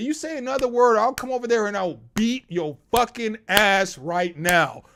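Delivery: fired-up, angry, heated tone. Telling how he answered a man yelling at him, retelling an angry threat. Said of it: "Because I'm heated".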